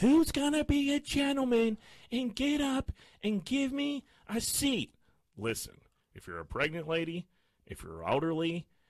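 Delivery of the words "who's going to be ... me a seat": shrill, very high, drawn-out scream at top of lungs. Retelling a woman on a jam-packed train screaming for a seat, retelling a woman screaming. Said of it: "screaming at people on the top of her lungs".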